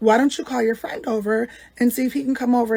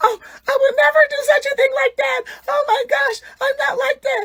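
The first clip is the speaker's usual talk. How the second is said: very high-pitched, weepy, tearful pleading voice; 14 semitones higher, 4 dB louder than usual. Retelling a friend's denial to another speaker: imitating crying and begging. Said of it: "She's crying and begging".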